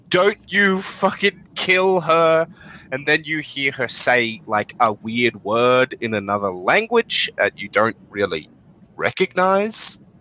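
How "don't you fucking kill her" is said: frantic, high, hysterical screaming. A storyteller voices a woman during a fight, screaming hysterically. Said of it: "screaming hysterically in uh".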